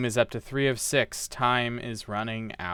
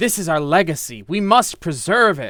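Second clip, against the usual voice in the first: through clenched teeth, getting louder; 5 semitones higher, 6 dB louder than usual. Narrator voicing William as he and River fight over old documents, through clenched teeth. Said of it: "William says through clenched teeth".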